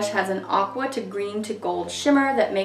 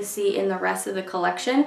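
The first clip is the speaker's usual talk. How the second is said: ordinary delivery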